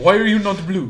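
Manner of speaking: put-on terrible Russian accent slipping French, loud and high. Admitting being terrible with accents and trying a Russian one, bad Russian accent drifting French. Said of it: "That went French for a second".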